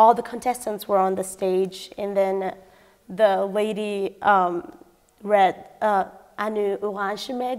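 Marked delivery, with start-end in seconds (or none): 6.4-7.6 French announcer-style pronunciation. Retelling an announcer reading a name at a competition: imitating a french accent. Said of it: "like that French accent".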